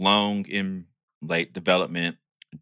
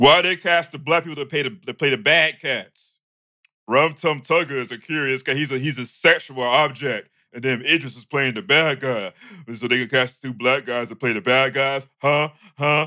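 put-on ashy voice, pitched higher; 6 semitones higher, 3 dB louder than usual. Playing a conspiracy theorist for a second: put-on ashy voice. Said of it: "I gotta put my ashy voice on".

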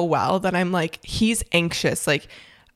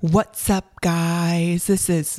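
put-on, mocking stoned-sounding voice. Teasing the other speaker about how his intro sounds, imitating a stoned-sounding greeting. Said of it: "you sound stoned".

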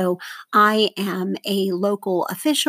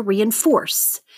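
reinforce, third syllable FORCE stressed and falling. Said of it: "That's the third syllable there".

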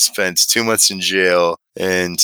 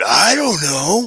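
put-on scream, higher; 11 semitones higher than usual. Retelling how an inmate in line stopped and screamed at a kid: imitating an inmate screaming. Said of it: "just stopped and screamed".

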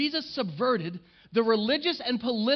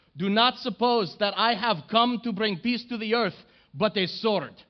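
sudden put-on Middle Eastern accent. Reading Jesus's words from Matthew aloud, the speaker slips into a sudden put-on accent. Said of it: "I don't know where that accent just came from".

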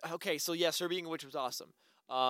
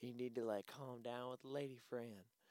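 hushed, soft, put-on Southern accent; 6 semitones lower, 17 dB quieter than usual. Quoting a line from the beginning of a movie: put-on Southern accent. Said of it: "Southern accent".

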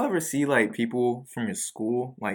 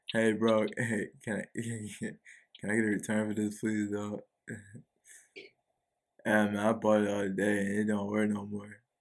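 put-on stoned voice, quieter; 2 semitones lower, 5 dB quieter than usual. Retelling a buzzed customer asking for a return: imitating a high customer. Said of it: "Is that your impression of somebody who's high?".

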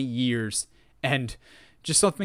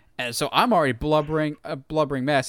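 ordinary delivery

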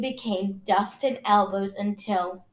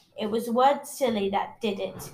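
plain

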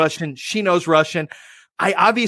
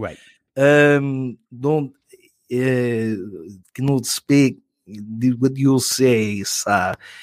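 bad, low put-on Russian accent, broken English; 6 semitones lower than usual. Retelling speaking to a lady while pretending to be from russia, in a fake russian accent. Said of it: "I know enough Russian accent to get by".

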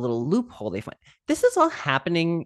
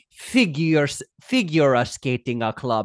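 put-on speech, extra a on every word, slower. Imitating how she speaks, adding an extra A on every word. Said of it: "That is exactly how she sounds".

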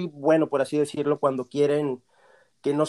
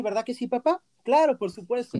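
put-on teenage boy voice, higher; 9 semitones higher than usual. Showing the requested taste of voice acting: young teen Pinocchio voice. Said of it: "simplemente estoy hablando un poco así".

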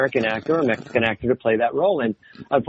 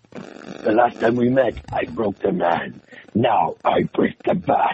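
big, exaggerated Latin American accent; 2 semitones lower than usual.

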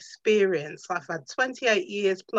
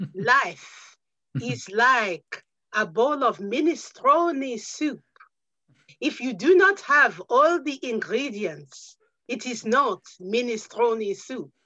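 terrible put-on Italian accent; 4 semitones higher than usual. On a podcast, the speaker tries out a saying in a terrible put-on accent. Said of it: "That was a terrible, terrible accent".

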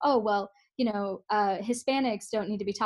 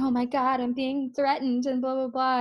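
put-on, overdone desperate voice; 4 semitones higher than usual. Describing a woman in a video pretending to be threatened, imitating a fake desperate voice. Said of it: "her quote-unquote desperate voice".

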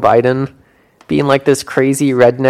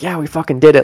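put-on whispered voice. Retelling a remark someone whispered into another's ear: imitating a whisper. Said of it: "whispered in, like, Obama's ear".

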